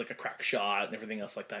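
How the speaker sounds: ordinary talk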